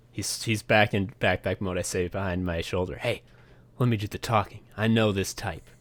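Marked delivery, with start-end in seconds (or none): 3.0-5.6 whispering in character, quieter. Voicing a character telling a companion to let him talk: whispering in character. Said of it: "I whisper".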